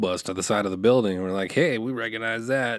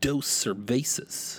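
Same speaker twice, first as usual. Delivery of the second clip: whispered, exaggerated Spanish accent with American English sound; 2 semitones higher, 4 dB quieter than usual.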